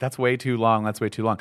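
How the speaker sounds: plain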